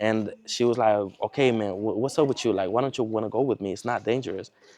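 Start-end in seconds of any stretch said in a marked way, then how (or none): 1.3-4.5 play-acted, fed-up, exasperated, angry tone. Retelling the day the girlfriend got mad at him: imitating her getting mad. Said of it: "she got mad one day".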